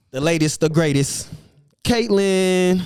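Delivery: slow, loud, building hype delivery.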